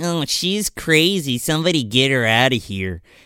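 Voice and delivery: put-on catty, snippy, bitchy mean-girl cheerleader dismissiveness. Retelling a movie scene, imitating a bitchy cheerleader. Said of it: "bitchy other cheerleader girl's like".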